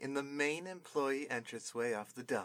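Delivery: ordinary delivery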